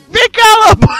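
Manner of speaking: put-on yelling. Telling the story as the wolf, retelling the old woman's shout.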